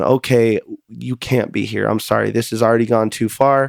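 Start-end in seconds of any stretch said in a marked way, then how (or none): none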